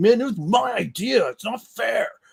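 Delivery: angry, slow complaining tone, pitched a touch high. Retelling a comedy sketch where the character is mad about credit: mad Joe Biden impression. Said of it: "he's all mad 'cause Obama got credit".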